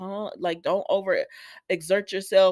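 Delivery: plain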